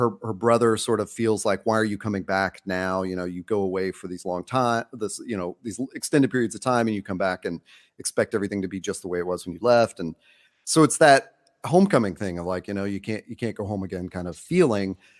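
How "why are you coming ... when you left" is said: ordinary talk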